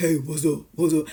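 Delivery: deep, quick, manly tough-guy voice. Contrasting a feminine voice with a high-testosterone man's, in a deep manly voice. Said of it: "I need it to be deep".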